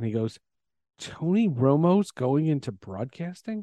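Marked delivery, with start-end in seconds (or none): 1.0-3.6 whispered. Retelling someone leaning in at a restaurant table: imitating Eli Manning whispering. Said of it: "he leans in and he whispers".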